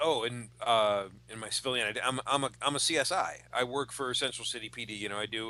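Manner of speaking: ordinary delivery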